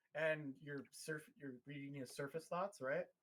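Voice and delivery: ordinary talk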